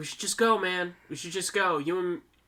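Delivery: ordinary talk, nothing marked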